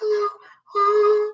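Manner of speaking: light, very high falsetto. Explaining vocal registers to a listener and showing an example: falsetto voice. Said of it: "That's just your voice like this".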